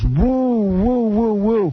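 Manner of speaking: very high, ringing stadium-style woo. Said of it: "it just goes".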